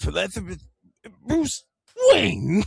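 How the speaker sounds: shrill, booming villain voice, high, loud, wildly swooping. Retelling voicing a line for a child who asked for it: Joker voice. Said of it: "Just make him laugh".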